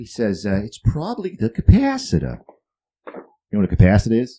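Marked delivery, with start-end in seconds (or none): 0.6-2.4 put-on very high, wild, swooping New England accent. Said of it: "Crazy New England accent".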